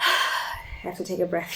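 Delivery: slow, half-whispered sigh, catching breath.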